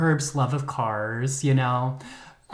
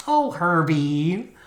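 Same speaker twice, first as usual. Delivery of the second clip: clumsy, bad put-on Midwest accent; 2 semitones higher than usual. Telling a story on your episode, speak as Julie in a bad Midwest accent. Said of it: "I will be doing Julie in a Midwest accent".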